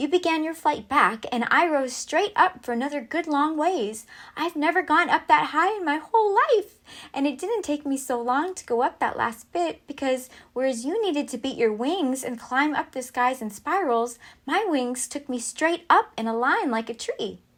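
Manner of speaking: bright, high, chirpy hummingbird voice. Reading a fable, the hummingbird explains the race to the eagle: chirpy hummingbird voice.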